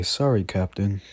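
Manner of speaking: ordinary talk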